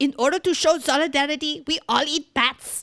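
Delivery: put-on sort-of-German accent, loud and high. Speaker delivering a mock message to listeners: quasi-German accent. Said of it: "Your accent sounds sort of quasi-German".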